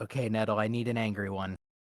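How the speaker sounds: murmuring under the breath. In a role-play game, a character picks a fuming item, whispering to oneself. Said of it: "I whisper to myself".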